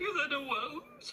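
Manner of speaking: crying while talking. Explaining to another speaker why they are crying: crying while talking. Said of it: "I'm crying because".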